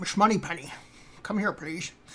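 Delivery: put-on Scottish film-star accent. Trying a Scottish accent, calling for Miss Moneypenny, Sean Connery voice. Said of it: "It's uh, Sean Connery".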